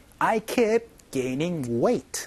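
very slow, careful, drill-like reading.

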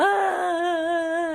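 high, wailing, sobbing cry. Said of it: "이런 소리가 나는 게 sob입니다".

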